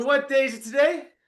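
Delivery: high-pitched, loud yelling. Host asking the group on the call what day it is, yelling out. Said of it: "I'm going to yell out what day's today".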